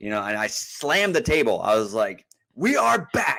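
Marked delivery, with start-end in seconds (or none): 2.5-3.4 full-on sports announcer voice, pitched way up. Retelling slamming the table during a college football highlight: full announcer voice. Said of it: "I even went full announcer voice right there".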